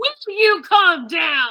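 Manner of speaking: very loud, booming, high swooping scream. A tabletop game character tries to intimidate a group, screaming. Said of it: "so you scream".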